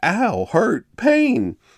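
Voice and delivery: mock, very high, shrill, swooping yelp of pain. Retelling what a witness says he yelled after being stung, retelling a yell of pain. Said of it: "rolled over and yelled".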